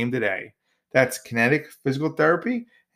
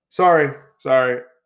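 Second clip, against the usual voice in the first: ordinary talk, nothing marked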